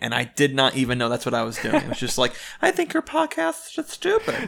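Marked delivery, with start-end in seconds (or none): 2.6-4.5 very high, campy put-on voice.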